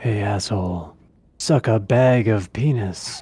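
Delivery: slow, very serious, dead-serious delivery.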